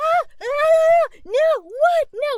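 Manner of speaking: very loud, very high, drawn-out shrieking panic. Retelling waking up in a panic: imitating own panicked screaming.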